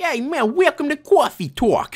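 put-on cute New York accent, pitched way up. Voicing a line as the game starts, new york accent. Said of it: "Do I sound like a New Yorker?".

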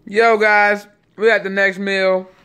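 talking with mouth full. Greeting viewers at the next meal after taking a bite, talking with mouth full. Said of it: "Sorry, I got some food in my mouth".

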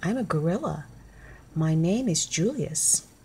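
ordinary talk

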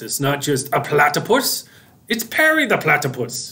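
badly done, hammy put-on cartoon villain voice, swooping. Speaker explaining an idea about a hat breaks into a horrible Doofenshmirtz impression. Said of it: "my horrible Doofenshmirtz impression".

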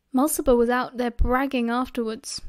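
ordinary delivery

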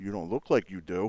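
put-on deadpan, bone-dry, no laughter. Retelling a juror's reply to a remark in court: imitating a deadpan reply.

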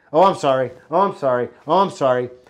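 careless, offhand, tossed-off tone. Teaching about apologies, demonstrating sorry thrown out all the time, throwaway careless apology. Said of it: "Don't throw sorry out all the time".

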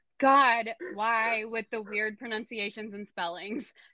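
ordinary delivery

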